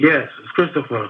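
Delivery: sultry voice. A caller introduces himself to the show host on the phone; sultry voice. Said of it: "You sounding sultry than a motherfucker".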